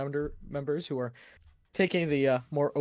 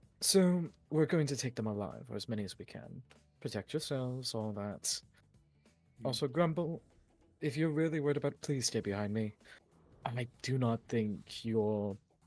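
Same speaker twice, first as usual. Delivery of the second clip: soft, hushed half-whisper, kept close; 2 semitones lower, 5 dB quieter than usual. A character addresses her companions before they attack, half-whispering. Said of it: "she whispers to all you".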